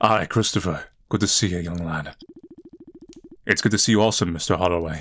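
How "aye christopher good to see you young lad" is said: put-on deep, low character voice. Acting out a scene, greeting young christopher, in a deep voice. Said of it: "I'm just doing the deep voice because it's funny".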